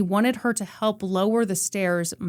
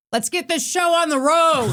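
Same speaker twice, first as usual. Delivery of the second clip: acted-out high, loud yelling; 8 semitones higher, 5 dB louder than usual. Retelling what a hijacker said over the interphone: imitating the hijacker yelling. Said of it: "and he was yelling".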